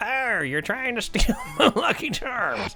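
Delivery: high monster voice. Redoing the line as the mud mephit moving toward Faye: mud mephit voice. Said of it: "So he's like".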